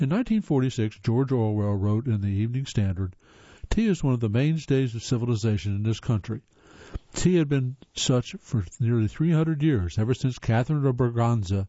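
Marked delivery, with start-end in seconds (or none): none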